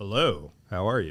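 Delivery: put-on low voice. Describing how you force yourself to greet people: put-on lowered voice. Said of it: "do you like lower your voice like that too".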